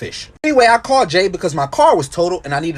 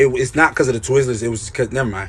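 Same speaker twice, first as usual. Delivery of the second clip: plain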